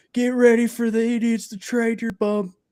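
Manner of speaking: play-acted, very high jeering scream, heckling yell. Retelling a fan at a baseball game: imitating a fan screaming. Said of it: "He's screaming at Trevor Bauer the whole game".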